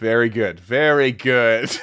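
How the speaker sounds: condescending, patronizing, faintly approving tone. Replying to the other speaker's answer, patronizing. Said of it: "He said patronizingly".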